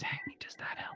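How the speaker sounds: hushed whisper. Testing whether the echo goes away during a call: whispering. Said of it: "I'll try whispering".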